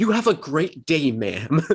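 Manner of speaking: snarky, condescending, smug politeness, acted out. Mocking how a man would sound helping an old lady, imitating a douchebag voice. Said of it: "it's going to sound like a douchebag".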